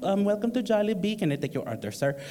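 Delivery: polite server voice. Retelling ordering in line at Jollibee, imitating a Jollibee server. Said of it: "And they don't sound like that".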